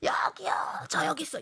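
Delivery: feeble, whispered voice drowned out by noise.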